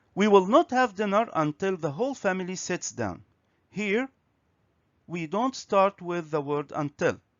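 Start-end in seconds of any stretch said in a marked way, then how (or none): none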